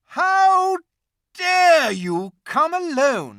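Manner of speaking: very high, very loud, shrill, booming, terrible fury. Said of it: "said the witch in a terrible voice".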